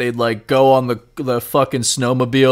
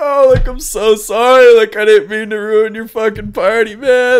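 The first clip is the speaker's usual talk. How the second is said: put-on weepy, tearful crying, high-pitched; 9 semitones higher, 4 dB louder than usual. Retelling being carried home from a party, imitating their past self crying. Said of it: "and I'm just crying".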